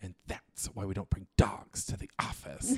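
tense, jaw-locked, through gritted teeth. Retelling what she said after the dog pooped at the office, through clenched teeth. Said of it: "just threw her clenched teeth".

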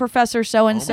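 ordinary talk

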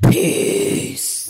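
very low, rough, creaky bass voice. Signing off the episode to listeners in the deepest Pam voice. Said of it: "in my deepest Pam voice".

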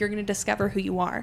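ordinary delivery

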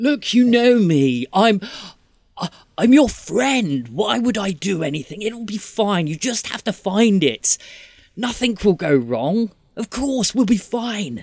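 very high, desperate, sickly, ailing voice. A game master voicing an unseen voice heard in the dark: desperate, sickly voice. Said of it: "It sounds pretty desperate and quite sickly as well".

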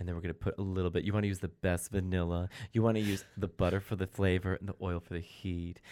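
calm, low, soft, soothing voice. Describing a woman's cooking episode, the speaker imitates her calm cooking voice. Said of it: "her calming voice when she cooks".

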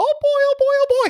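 very high, squeaky cartoon voice, pitched way up. Joking with the other speaker about Mickey Mouse, in a Mickey Mouse voice. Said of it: "audition for Disney with your Mickey sound?".

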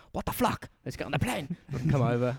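loose, attempted put-on Chinese accent. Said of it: "If that was a Chinese accent".

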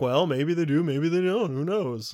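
teasing, hedging movie-executive voice. Discussing how the studio keeps a casting secret; imitating a movie executive. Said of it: "that's a very accurate movie executive impersonation".

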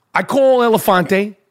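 plain

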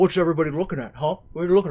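swaggering, cocky tough-guy cartoon hunk voice, full of swagger. Quoting a cartoon scene in conversation: Johnny Bravo impression. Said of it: "You do that really well".

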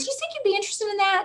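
put-on Southern accent with a very high-pitched voice. Retelling a director's request for help with a breakfast: Jana Knezik's Southern accent. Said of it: "she has this great Southern accent".

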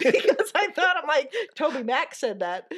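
giggly, laugh-filled speech. Explaining to another speaker why a remark seemed funny, laughing while talking. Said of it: "but I am laughing".

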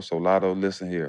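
soft, put-on, seductive, sweet-talking sexy voice. Speaker switches to talking directly to Lotto, in a sexy voice.

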